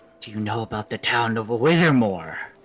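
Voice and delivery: low, secretive, conspiratorial voice. Answering someone who says the group is loud, speak in a low conspiratorial voice. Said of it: "I get all like my low conspiratorial voice again".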